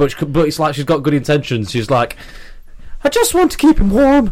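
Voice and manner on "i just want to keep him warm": put-on little Irish girl voice, much higher, louder. A speaker acting out a girl with a doll to a listener: little Irish girl voice. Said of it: "That's a little girl's Irish voice".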